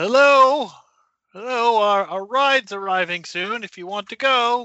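loud, high-pitched calling. Calling down the stairs to others in the basement: yelling down the stairs. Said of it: "I will stand at the top of the stairs and yell".

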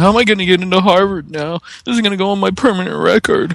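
very high, sobbing blubber. Retelling a man's words while his attorney tries to calm him, mock blubbering. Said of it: "And Thomas is just blubbering".

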